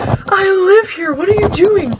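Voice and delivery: put-on very high, loud, slow, confused drunk voice. Retelling what a drunk man said, stumbling out the door: imitating a drunk man. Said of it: "the drunk guy stumbles out the door".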